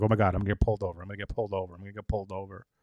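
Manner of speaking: panicky, fast, looping anxious fretting, repeating itself. Acting out imagined thoughts while driving drunk: imitating anxious worry. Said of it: "the anxiety I would have".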